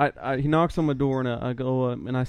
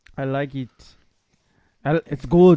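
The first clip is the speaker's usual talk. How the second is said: put-on Austrian-accented voice, louder; 6 dB louder than usual. Joking about liking a movie, doing an Arnold impression. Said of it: "My Arnold impression".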